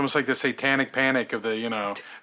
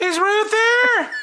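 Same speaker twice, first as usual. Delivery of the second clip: very high, raised put-on male voice; 7 dB louder than usual. Acting out the caller's phone request: imitating a high-pitched male voice. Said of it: "the mysterious male voice".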